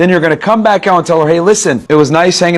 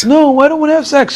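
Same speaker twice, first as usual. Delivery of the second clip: high-pitched babyish put-on voice; 10 semitones higher than usual. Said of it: "do not make a baby face and use a baby voice".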